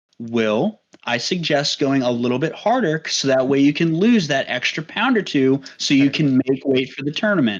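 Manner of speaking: ordinary delivery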